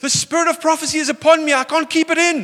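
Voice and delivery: high, loud shout. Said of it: "they would just say like".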